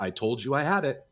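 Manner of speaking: put-on referee voice, scolding and yelling. Retelling a referee repeating himself to a player: imitating the referee yelling. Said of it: "And the ref's going".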